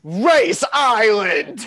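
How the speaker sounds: loud, all-caps shout on every word. Reading out a title typed in all caps in the notes, give an all-caps shout. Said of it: "so I'm going to say it in all caps".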